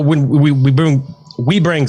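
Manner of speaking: stuttering. Speaker in a conversation about Mixer, stuttering. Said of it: "God, I'm stuttering".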